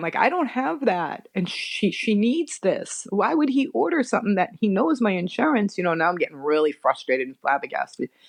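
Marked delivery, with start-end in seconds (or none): 0.2-5.8 play-acted tearful voice, high and slow, near crying. Retelling being told eye drops cost eighty dollars: retelling own tearful words. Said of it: "and now I'm starting to cry".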